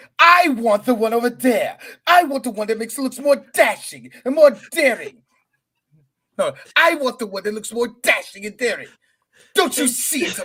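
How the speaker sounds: high, fake British accent with dashing airs. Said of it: "Why does your hand speak with a British accent?".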